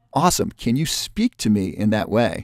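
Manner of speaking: plain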